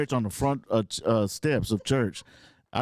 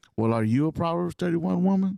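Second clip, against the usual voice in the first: ordinary delivery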